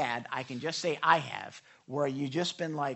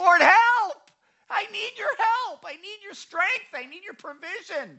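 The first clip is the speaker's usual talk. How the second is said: desperate, very high, very loud crying out; 10 dB louder than usual. Retelling how a desperate man cries out to the Lord, acting out a loud cry for help. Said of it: "And he's crying out to the Lord".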